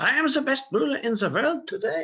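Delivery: fake German accent, very high and loud. Quoting Kaiser Wilhelm's boast to his chancellor, in a fake German accent. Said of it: "it has to be said with a fake German accent".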